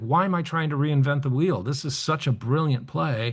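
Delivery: ordinary delivery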